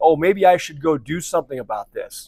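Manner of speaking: usual speaking voice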